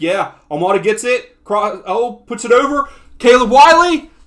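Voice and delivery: very loud, high, excited yelling.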